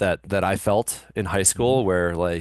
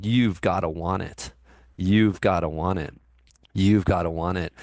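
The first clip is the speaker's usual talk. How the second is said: plain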